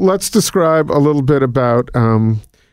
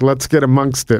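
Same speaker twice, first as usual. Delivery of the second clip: ordinary talk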